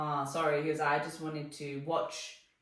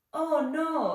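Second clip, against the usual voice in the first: put-on high, childlike small-kid voice; 11 semitones higher, 5 dB louder than usual. Retelling a father's reaction at the airport, imitating dad sounding like a little kid. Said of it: "Really good impression".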